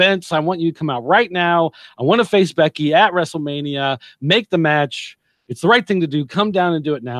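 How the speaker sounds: put-on angry, pissed-off, furious-sounding voice. Retelling a wrestling promo, imitating angry Ronda demanding the match. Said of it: "she's pissed off and she's like".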